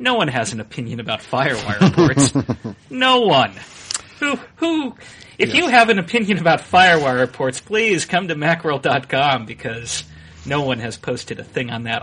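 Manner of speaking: openly sarcastic, mock-earnest tone, loud and swooping. Talking about the MacWorld.com forums and FireWire ports, sarcastic. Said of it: "I hope the sarcasm in my voice is evident".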